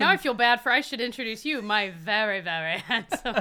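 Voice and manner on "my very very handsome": very, very slow, stretched-out delivery. Introducing a husband at the start of a podcast: sounding like Moira Rose. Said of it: "You sound like Moira Rose".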